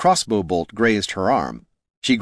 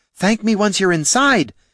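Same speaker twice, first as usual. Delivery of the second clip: very high-pitched, hollered call; 12 semitones higher, 4 dB louder than usual. Katha calls back to Laruna from the tower window, hollering back. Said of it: "Katha hollered back".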